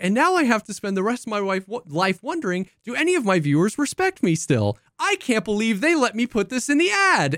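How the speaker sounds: uplifting, earnest, sincere inspirational commercial-style voice. Retelling what he said in a wireless carrier ad, in a mock-inspirational tone. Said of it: "he speaks in this like really inspirational tone".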